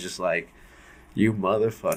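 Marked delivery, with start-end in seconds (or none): 1.1-2.0 play-acted, hushed, furious muttering under the breath. Retelling a friend looking into the hole, imitating an angry friend. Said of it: "He was pissed".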